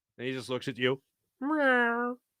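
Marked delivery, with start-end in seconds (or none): 1.4-2.2 high little cat meow, pitched up. Joking about a football coach ignoring fans: cat impression of Jonathan Gannon. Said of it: "my impression of a cat doing an impression of Jonathan Gannon".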